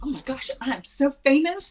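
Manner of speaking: put-on thrilled, giddy, high, excited gush. Retelling a man recognizing her during an exit row briefing: acting out own excitement. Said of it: "I'm getting excited".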